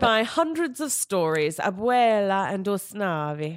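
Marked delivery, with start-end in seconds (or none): 1.6-3.6 names pronounced with Italian-style sounds. Reading out two character names, saying names like they're italian. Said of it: "I'm saying it like they're Italian".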